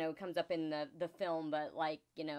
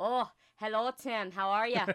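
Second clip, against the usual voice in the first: amateur put-on Irish accent, raised, pitched up; 5 semitones higher, 5 dB louder than usual. Showing off an Irish accent picked up from time spent in Ireland. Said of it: "I can kind of do an Irish accent".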